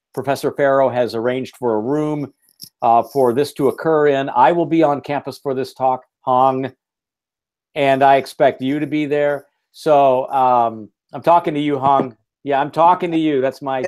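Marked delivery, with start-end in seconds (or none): 11.2-13.4 fast tough-guy gangster voice. Speaking to Hong about attending a campus talk, in a Robert De Niro voice. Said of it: "Robert De Niro voice".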